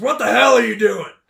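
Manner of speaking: loud, high-pitched, furious shout. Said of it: "John says".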